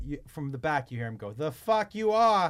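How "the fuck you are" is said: very slow, loud, drawn-out put-on Boston accent. Retelling what a passenger from the back said to the pilot: imitating a Boston accent. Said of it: "clearly from Boston".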